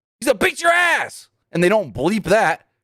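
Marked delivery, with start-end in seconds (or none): 0.2-1.3 play-acted very high, shrill, blurted shout. Recounting a moment from a TV show, retelling a man's yell. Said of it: "And then Don just yells".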